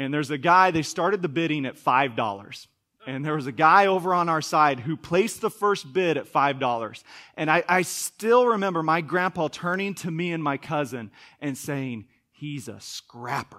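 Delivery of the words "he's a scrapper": acted, openly contemptuous, scornful and disdainful. Retelling a grandpa's remark about another bidder: imitating disdainful tone. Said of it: "he said it with such disdain".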